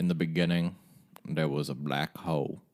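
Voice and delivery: narration in a voice-of-God narrator style. Showing how Morgan Freeman sounds when he talks: Morgan Freeman impression. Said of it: "Morgan Freeman sounds like this when he talks".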